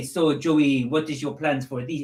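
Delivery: put-on French accent. Quoting French commentators asking Joey questions in English, with a French accent. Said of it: "obviously with a French accent".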